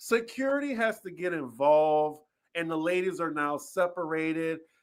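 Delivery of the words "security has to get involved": ordinary delivery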